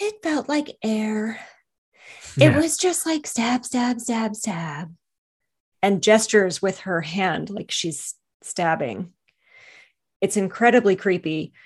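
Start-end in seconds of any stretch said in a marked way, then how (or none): 0.0-4.9 very floaty, drifting delivery, every word floating. Retelling what Morgan said when questioned, in Morgan's very floaty voice. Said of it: "she talks in this very floaty voice".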